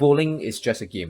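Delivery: normal talking voice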